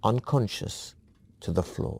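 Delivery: ordinary delivery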